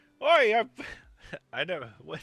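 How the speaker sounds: put-on Brooklyn accent. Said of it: "My Brooklyn accent?".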